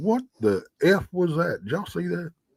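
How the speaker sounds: frozen, stunned disbelief. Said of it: "I froze and I'm like".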